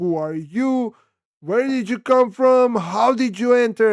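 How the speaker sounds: high, furious, angry screaming. Retelling how furious ladies at the top floor confronted them: imitating someone screaming. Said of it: "They started screaming".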